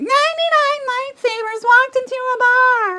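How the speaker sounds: squeaky, very high-pitched voice. Retelling a woman's lightsaber joke, imitating her very high-pitched voice. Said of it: "her voice was very high pitched".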